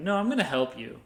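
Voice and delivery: normal talking voice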